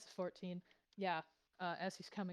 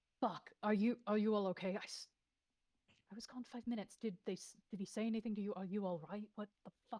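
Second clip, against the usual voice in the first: put-on worried, concerned tone; 2 semitones higher than usual. Retelling what a man said on coming back to the others, acting worried. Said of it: "because he clearly looks worried".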